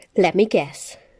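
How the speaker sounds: dangerously calm. A furious woman confronts the man who attacked her sanctuary, deadly calm. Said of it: "she said in a deadly calm voice".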